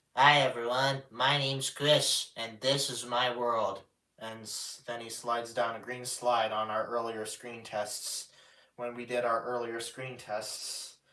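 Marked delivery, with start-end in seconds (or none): 0.2-3.8 puppet voice, loud. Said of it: "He starts his episodes of Chris's Playroom by saying".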